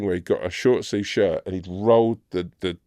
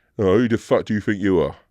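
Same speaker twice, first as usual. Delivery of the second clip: mock-aggressive, confrontational man's voice; 3 dB louder than usual. Retelling how a guy came up while people queued for pictures, imitating an aggressive man. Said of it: "he was so aggressive".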